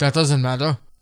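put-on Nigerian accent. Retelling a man listing four violations: imitating a nigerian accent. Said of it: "Was that a Nigerian accent?".

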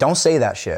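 ordinary talk

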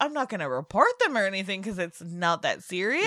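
normal talking voice

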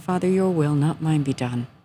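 ordinary talk, nothing marked

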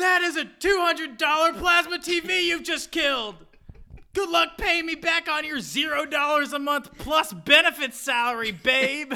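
acted shrieking outburst. Retelling the scene where Michael yells at Jan: retelling Michael's yell. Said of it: "Michael yells at her".

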